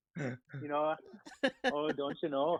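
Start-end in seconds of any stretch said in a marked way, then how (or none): 1.6-2.6 Minnesotan accent on o's, quieter. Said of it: "my O's are".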